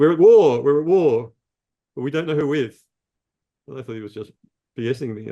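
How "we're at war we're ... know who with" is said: put-on loud, raised, strong New Jersey accent. Speaker retells Father Moses banging on the shower door, in Father Moses's big New Jersey accent. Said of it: "with this big New Jersey accent".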